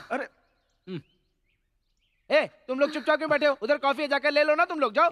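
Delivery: calling out voice. In a group scene, calling out to others sitting silently, shouting. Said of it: "इतना चिल्ला क्यों रहा है तू?".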